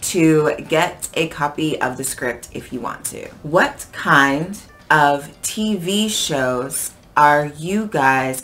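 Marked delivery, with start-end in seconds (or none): 3.4-8.4 very slow, carefully pronounced delivery. Reading a script line so viewers can hear each word, slowed down for listeners. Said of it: "this is the time when I'm slowing down for you".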